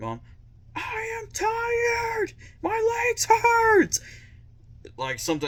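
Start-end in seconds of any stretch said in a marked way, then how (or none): 0.0-4.0 very high, dragged-out, drawn-out screaming. Recalling an eighth-grade track race, the speaker retells screaming to mom: retelling a scream. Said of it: "I was screaming".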